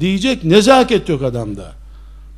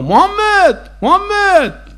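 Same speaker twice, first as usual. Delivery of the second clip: mock crude, coarse hollering, very high-pitched; 10 semitones higher than usual. Speaker retells someone shouting after the Prophet from behind, retelling a rude shout. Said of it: "kaba kaba".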